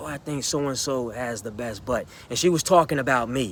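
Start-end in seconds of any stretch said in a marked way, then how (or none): 0.0-2.1 mimicked mumble, much quieter, lower. Retelling what a girl said about the speaker, imitating her mumble under breath. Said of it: "I heard her mumble under her breath".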